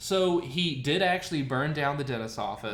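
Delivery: ordinary delivery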